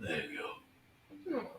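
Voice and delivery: hushed, very quiet, rough, coarse hoarse rasp. Narrating a scene, voicing a hurt man whose eye opens up: coarse, hoarse voice. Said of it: "Kind of that coarse, like, like hoarse voice".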